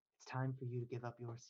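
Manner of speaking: almost a whisper. Voicing a headless figure who touches a player's shoulder: almost a whisper. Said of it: "She moves in almost a whisper".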